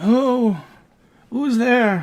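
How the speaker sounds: breathless, panting, very high-pitched cry. Voicing a captive man under a burlap sack: panting captive under a sack. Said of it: "the man is panting from underneath the burlap sack".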